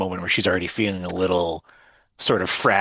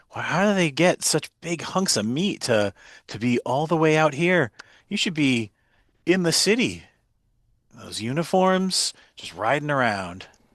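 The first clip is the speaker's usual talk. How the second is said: acted flirtatious voice, higher pitch; 8 semitones higher than usual. Playing a character who flirts with troopers through a car window: flirty in-character voice. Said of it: "And just sort of looks over and she's like".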